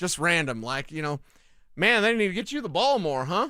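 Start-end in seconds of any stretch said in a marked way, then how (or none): 1.8-3.5 offhand, tossed-off, casual delivery. Imagining a former player telling a receiver to demand the ball: Brandon Stokely impression. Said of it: "That's my Brandon Stokely impression".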